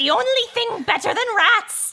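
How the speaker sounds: high, loud, gleeful rat-like shout.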